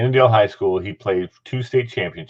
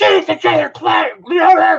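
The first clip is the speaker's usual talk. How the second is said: shrill, high, loud hollering coach scream; 6 dB louder than usual. Recalling a man screaming at someone to get him ready; imitating Dick Adams screaming. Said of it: "kept screaming at him".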